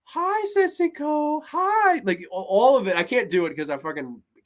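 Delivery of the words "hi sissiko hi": put-on very high, innocent, sweet childlike schoolgirl voice. Praising an actress's performance, imitating Tomie's childlike schoolgirl voice. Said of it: "She talks very like the schoolgirl voice".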